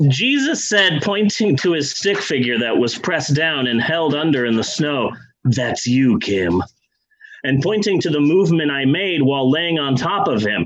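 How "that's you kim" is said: low gravelly voice, lower and slower. Retelling what Jesus said while pointing at a stick figure in the snow, low gravelly voice. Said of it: "that like kind of low, gravelly".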